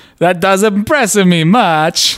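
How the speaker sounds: high voice sliding toward an Eastern European accent. Signing off until next week, repeating the closing line in a near-Borat accent. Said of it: "I'm almost making it into a Borat".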